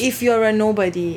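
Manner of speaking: ordinary talk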